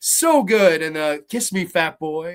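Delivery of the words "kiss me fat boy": put-on creepy clown voice. Quoting the clown coming out of the drain: imitating Tim Curry as the clown. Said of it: "Tim Curry steered generations of kids".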